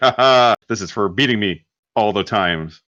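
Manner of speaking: ordinary talk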